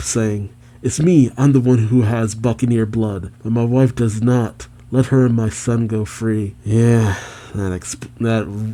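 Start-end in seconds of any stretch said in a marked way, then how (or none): none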